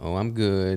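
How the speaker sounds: put-on glum, down-in-the-dumps, mopey tone. Retelling the reply of an unsmiling woman across the counter: Eeyore-style gloomy voice. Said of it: "kind of like Eeyore style".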